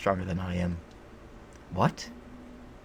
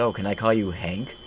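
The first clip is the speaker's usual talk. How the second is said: ordinary delivery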